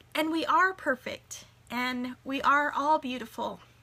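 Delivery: teary, welling-up, emotional voice. Speaking about loving yourself for who you are, getting teary-eyed. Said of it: "Here I am getting teary-eyed".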